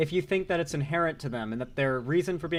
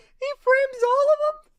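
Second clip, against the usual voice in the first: very high, slow crying delivery with true emotion. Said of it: "I love the way he says it".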